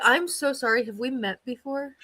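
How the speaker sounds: feigned innocent ignorance, slow and falsely polite. Suggesting what to say to someone who ghosted: acting fake innocent. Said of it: "you need to be like".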